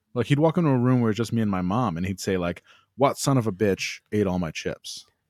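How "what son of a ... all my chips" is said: usual speaking voice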